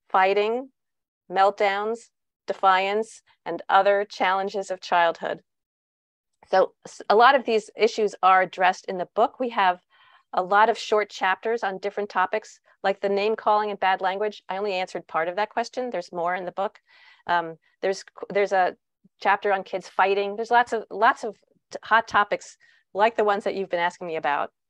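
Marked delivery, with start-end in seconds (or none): 0.1-5.4 slow, spaced-out, dictation-like delivery. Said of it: "I'll say it slowly for the translator".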